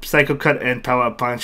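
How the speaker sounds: ordinary talk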